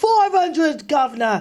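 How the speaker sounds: put-on Cockney accent. Repeating the guest list number as a joke: disembodied cockney voice. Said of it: "that just disembodied Cockney voice".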